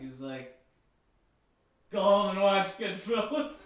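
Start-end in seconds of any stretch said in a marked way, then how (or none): 1.9-3.5 put-on drunk voice, louder. Retelling what a man told a kid after buying him a sandwich, as drunk Ray Liotta. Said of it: "And it was drunk Ray Liotta".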